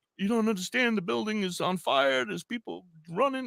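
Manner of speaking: put-on crying, pitched very high. Retelling what a woman said crying on the phone: imitating someone crying. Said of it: "and she's crying, and she's like".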